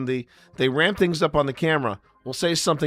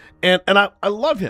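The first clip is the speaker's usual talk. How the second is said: ordinary talk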